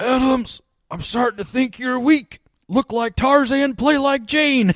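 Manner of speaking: very loud, very high, raspy coach-style yell. Recounting his coach's reply to his request: raspy coach voice. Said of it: "he had a real raspy voice".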